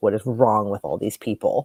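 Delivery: ordinary delivery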